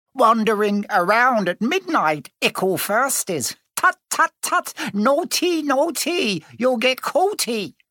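gleeful cackling, very high pitched. Peeves catches them wandering at midnight and taunts them, cackling. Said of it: "Peeves cackled".

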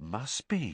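low, hushed, awed, under the breath. Ron answers Harry's muttered question about Moody, in a low, awed voice. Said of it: "said Ron in a low, awed voice".

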